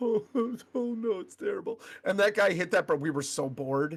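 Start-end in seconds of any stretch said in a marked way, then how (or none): 0.0-1.8 acted blubbering, distressed, high weepy crying voice. Recalling everyone crying around them at a movie, imitating people crying. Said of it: "everybody's crying all around us".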